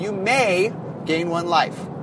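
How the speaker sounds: may stressed and slowed down.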